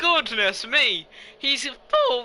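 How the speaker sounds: voice cracking mid-phrase. A commentator calling a race as it happens, voice cracking. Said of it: "what a voice crack".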